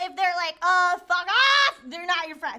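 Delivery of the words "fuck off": squawky, bird-like voice. Giving advice, acting out a friend's dismissive reply, bird-like squawk. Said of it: "I sounded like a bird".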